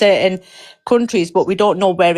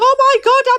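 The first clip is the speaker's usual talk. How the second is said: very high, put-on frightened whine. Speaker scolds the listener about last weekend, mocking someone acting a victim. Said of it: "acting a victim, saying".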